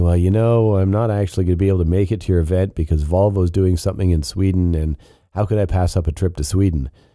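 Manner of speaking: ordinary talk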